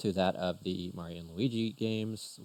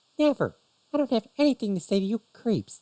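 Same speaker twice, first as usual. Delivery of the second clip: shrill, very high, very loud put-on female voice; 9 dB louder than usual. Voicing a girl who is being questioned: feminine female voice. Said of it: "I can't do a feminine, female voice very well".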